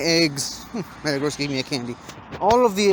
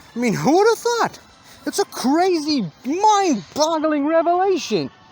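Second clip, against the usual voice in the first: very high, sarcastic, fake astonished amazement; 10 semitones higher than usual. Opening the episode with a snarky remark: sarcastic fake amazement. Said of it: "I'm being sarcastic, obviously".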